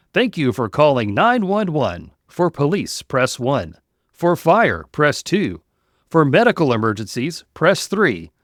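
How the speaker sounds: corny, cheesy, canned recorded announcer voiceover. Retelling answering after his son dialed, in a cheesy announcer voice. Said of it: "I went into my cheesy announcer voice".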